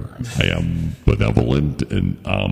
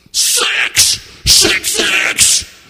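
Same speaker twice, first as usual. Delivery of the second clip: high, loud, raised, belted demonic voice; 6 dB louder than usual. Asked to do an imitation of Satan, in a Satan impression. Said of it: "My imitation of Satan?".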